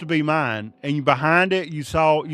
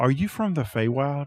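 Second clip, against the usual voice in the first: hushed half-whisper, close and intimate; 4 dB quieter than usual. A game narrator voices a character who looks around and half-whispers in your ear. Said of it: "he looks around and he whispers in your ear".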